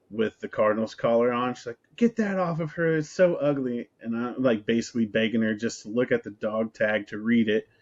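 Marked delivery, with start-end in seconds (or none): 1.9-3.9 high, loud yelling voice. Retelling what she yelled at the speaker on seeing the dog: imitating her yelling. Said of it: "she's like yelling at me".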